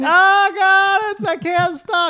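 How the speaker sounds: play-acted shrill, very loud, drawn-out struggling cry. Acting out a planned gym skit: pretending to be stuck, struggling. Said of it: "pretend to be, like, stuck under a bar".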